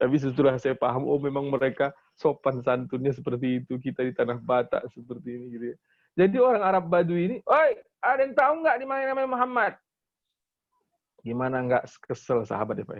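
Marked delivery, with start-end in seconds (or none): 7.5-9.7 very high, brusque, intimidating, snapped-out holler. Speaker retelling how a Bedouin man called out in the mosque, retelling a Batak-style snapping call. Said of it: "sendirian ngegertak gitu kan. Persis orang Batak".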